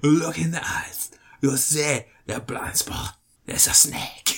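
put-on breathy, whispered speech with Cajun accent. Showing another person how the actor sounded in Anaconda, doing Jon Voight's Cajun voice. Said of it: "That was his Cajun voice".

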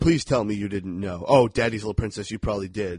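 normal talking voice

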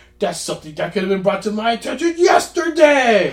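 mock yelling, high-pitched, building toward the end. Quoting a movie line while discussing Sandler films: Adam Sandler yelling impression. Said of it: "He's just yelling".

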